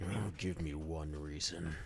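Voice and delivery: through gritted teeth. Voicing a guard in a game scene: through gritted teeth. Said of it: "he grits his teeth".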